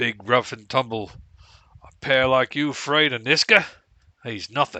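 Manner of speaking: put-on Aussie-sounding Australian accent. In character, answering another's refusal: Australian accent. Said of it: "Now I've gone Australian on you".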